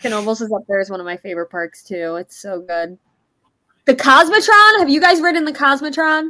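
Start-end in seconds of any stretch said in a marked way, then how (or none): 3.8-6.3 abrupt, loud, high-pitched blurt. Praising a favorite park, the speaker asks the others about a ride: loud. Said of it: "You said it so loudly".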